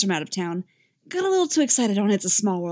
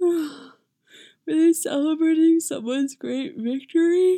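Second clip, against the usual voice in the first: sleepy, drowsy, half-asleep voice; 8 semitones higher than usual. Narrator reads a character's question once the fireworks show has ended, sleepy. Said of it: "Uller asks sleepily".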